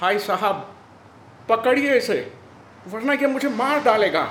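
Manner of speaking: very loud, very high-pitched yelled pleading. After a gunshot, a man being held down makes a shouting plea. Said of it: "James ने चिल्लाते हुए याचना की".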